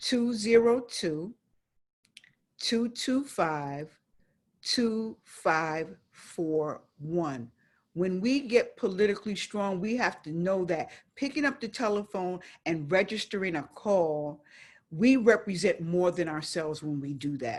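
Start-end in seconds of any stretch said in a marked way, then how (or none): 0.0-7.5 very slow, spaced-out delivery. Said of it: "I'm gonna say it again".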